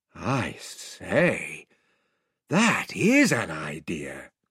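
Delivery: awestruck, very low murmur. Narrator reading Edmund's reply to another character, in an awed voice. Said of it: "said Edmund in an awed voice".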